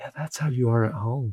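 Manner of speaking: mild, gentle, soft, tender tone. Retelling what a man's wife told him when he came home, imitating a gentle tone. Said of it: "in a more gentle way than the other two".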